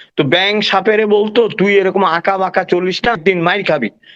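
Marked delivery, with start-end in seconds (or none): none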